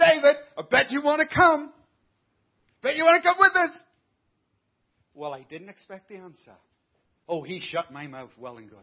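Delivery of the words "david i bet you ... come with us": very loud, high-pitched jeering, mocking tone. Retelling how he looked back and mocked David, retelling a mocking taunt. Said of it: "I mocked him".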